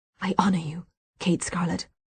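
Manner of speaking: intense whisper. Reading a naming ritual where each guest toasts the baby: fervent whisper. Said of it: "Freya's fervent whisper".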